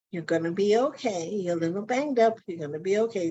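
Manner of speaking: gentle, easy, soothing voice. Retelling what a friend said after a car accident: imitating a gentle voice. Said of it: "Gentle voice".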